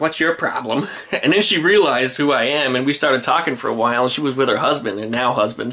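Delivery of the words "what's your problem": put-on sarcastic tone. Retelling a woman at a car show pointing back at him: retelling a sarcastic question.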